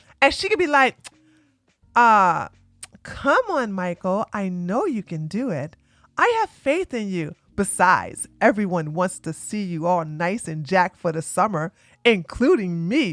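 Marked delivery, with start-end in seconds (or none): 2.0-13.1 low, sultry, seductive woman's voice. Explaining how ChatGPT can coach workouts, as ChatGPT in sexy woman voice. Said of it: "talk to you in a sexy woman voice".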